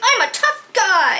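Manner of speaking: very high, mocking, whiny voice. Retelling what someone screamed out after a dream, in a mocking whiny voice. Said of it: "you said I said it in a whiny voice".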